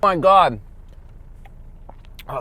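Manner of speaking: talking with mouth full of food. Eating blueberries while talking to viewers, mouth full of blueberries. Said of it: "sorry, mouthful of blueberries".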